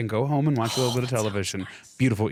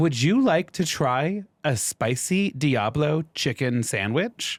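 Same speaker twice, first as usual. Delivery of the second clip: acted virtual assistant voice; 3 semitones higher than usual. Retelling ordering at Wendy's, the speaker imitates the AI assistant voice. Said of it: "the stupid little A I voice comes on".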